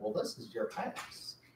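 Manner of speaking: put-on heavy, thick Southern accent in breathy whisper. Imitating how people in Oklahoma talked in 1986, in a thick Southern accent. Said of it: "people had a fairly thick Southern".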